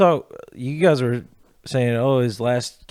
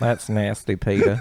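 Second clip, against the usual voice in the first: put-on animated cartoon character voice; 3 semitones lower than usual. Doing the Cleveland impression another speaker asked for: Cleveland voice. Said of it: "Cleveland impression".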